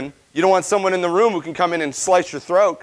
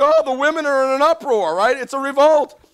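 mock frantic, alarmed, panicked freaking-out outburst; 8 semitones higher than usual. Speaker retells a man's reaction to the queen's refusal, imitating his panic. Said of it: "he's like freaking out, panicking".

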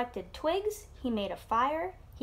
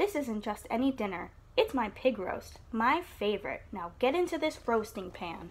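plain reading voice

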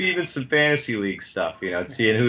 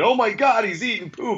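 put-on shrieking, very high panicked scream; 11 semitones higher than usual. Retelling seeing his son eating poop in the tub: imitating own past scream. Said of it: "I was screaming".

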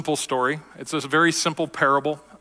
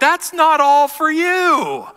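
very high, very loud, drawn-out protesting yell; 12 semitones higher, 8 dB louder than usual. Retelling how everyone in line reacted to another customer, retelling a group yell. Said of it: "we all yelled like".

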